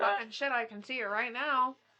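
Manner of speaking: mock, sneering, dripping with sarcasm. Retelling someone's reaction to a red sky: imitating a sarcastic remark.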